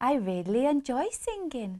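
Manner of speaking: spoken with Welsh accent. Coaching a partner through the Welsh accent, the speaker models the phrase: Welsh accent. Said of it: "Say after me".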